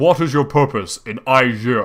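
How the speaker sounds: thundering, very loud, booming stone-guardian sphinx voice. A game narrator voices the left sphinx questioning the party, booming sphinx voice. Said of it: "The one on the left booms".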